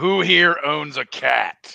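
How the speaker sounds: huge booming call, very loud, slow and rough. Stepping out of the entrance with a sword, in a loud, booming voice. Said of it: "in a loud, booming voice".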